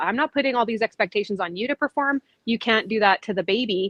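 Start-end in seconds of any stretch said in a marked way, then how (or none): none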